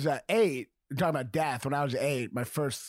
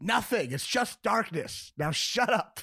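mock weary, fed-up tone, slow and high-pitched; 6 semitones higher than usual. Retelling a father answering a child in the car: imitating a fed-up dad. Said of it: "my dad was just so sick of it".

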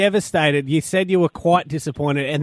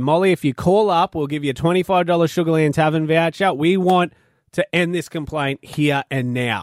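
ordinary delivery

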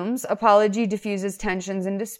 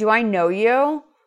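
put-on rude tone. Retelling a movie character's reply to the woman: imitating a rude reply. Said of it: "So rude".

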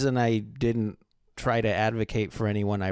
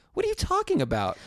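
high-pitched bewildered exclamation. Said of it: "I'm like".

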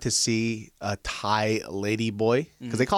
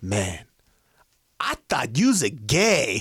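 put-on drunk man's voice. Retelling what an uncle said into the mic: imitating a drunk uncle. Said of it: "drunk Korean uncle sounds like Jar Jar Binks".

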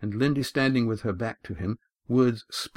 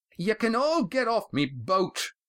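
very high, painfully loud, shrill roar; 11 semitones higher than usual. Reading the story aloud, Roaring Jack addresses the others aboard the Molly, loud shrill shouting. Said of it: "Roaring Jack's voice was as usual, painfully loud, but this time there was a shrill tone".

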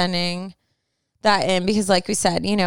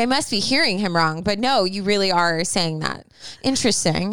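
normal talking voice

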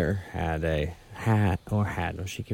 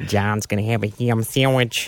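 awful put-on Western New York accent, louder; 3 semitones higher, 5 dB louder than usual. Telling a story about a bird, quoting someone in an absolute awful Western New York accent. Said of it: "absolute awful Western New York accent".

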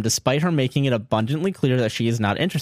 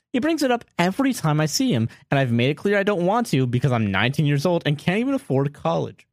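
ordinary talk, nothing marked

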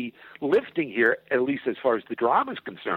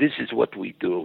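put-on Czech accent, lower; 4 semitones lower than usual. Retelling what the director said: Milos's Czechoslovakian accent. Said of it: "Milos has this Czechoslovakian accent".

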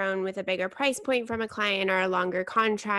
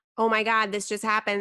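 put-on crying voice. Retelling a call to friends after good news, imitating own past crying. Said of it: "I've called my friends, like, crying".

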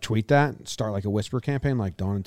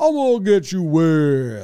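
goofy put-on cartoon voice, high, loud, wet, stretched, swooping; 6 semitones higher, 7 dB louder than usual. Imitating the tipping water bucket at the water park, in a cartoon voice. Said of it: "it was like a cartoon voice".

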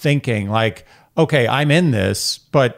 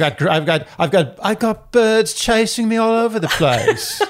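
stumbling put-on Northern English accent, pitched up; 9 semitones higher than usual. Imitating the guy boasting about birds chasing him: put-on Northern British accent. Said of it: "Northern British".

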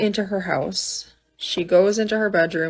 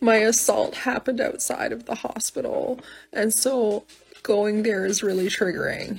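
put-on sobbing, halting words broken by sobs; 3 semitones higher, 3 dB quieter than usual. Retelling what a woman told him, imitating her speaking through sobs. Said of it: "she's doing this through sobs".

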